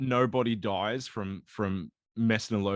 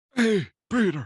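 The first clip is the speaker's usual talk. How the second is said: put-on old man voice, very high and raised; 10 semitones higher, 5 dB louder than usual. Voicing the Vulture after being told he's an old man: old man Vulture voice. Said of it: "He's an old man".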